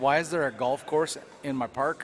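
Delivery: ordinary delivery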